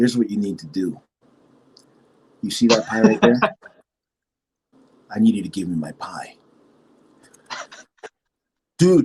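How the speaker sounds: low, scary, threatening, menacing voice. Retelling demanding the right pie from a man, in a low scary voice. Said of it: "The lower I get, the scarier it gets".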